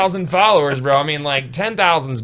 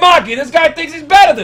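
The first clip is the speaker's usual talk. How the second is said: very high put-on New York accent; 7 dB louder than usual. Acting out a quoted line in a put-on New York accent. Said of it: "That's New York. You're doing the wrong accent".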